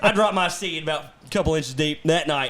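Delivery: ordinary talk, nothing marked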